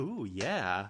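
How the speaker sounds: fake creepy leering voice. Retelling how Mike watches a couple outside, imitating Mike's creepy leer. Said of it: "smiles like a creep".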